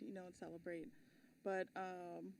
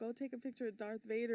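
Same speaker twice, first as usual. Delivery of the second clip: usual speaking voice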